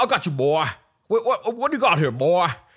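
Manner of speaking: loud, high cartoon rooster voice. Revealing the second voice he heard, doing a Foghorn Leghorn impression. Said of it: "but it's Foghorn Leghorn".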